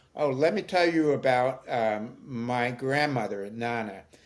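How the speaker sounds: usual speaking voice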